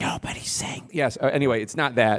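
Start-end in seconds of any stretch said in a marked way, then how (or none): 0.0-0.9 put-on whispered voice, quieter. Imitating the thing Biden does when he whispers to make a point: Biden whisper impression. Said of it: "that thing he does when he whispers to make a point".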